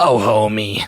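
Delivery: low-pitched sitcom cartoon housewife voice. Taking a turn in a group Marge Simpson impression round: Marge Simpson impression, Selma-like. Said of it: "that's more Selma".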